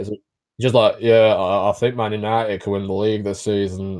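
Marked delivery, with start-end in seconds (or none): 1.0-4.0 flat commentator voice, much lower. Mocking a TV football pundit's commentary, in a monotone Paul Scholes impression. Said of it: "the most monotone, boring pundit".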